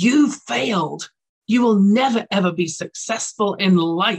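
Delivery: loud, furious, enraged scream. Speaker retelling a man opening their results envelope, imitating someone screaming. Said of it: "he screams at me".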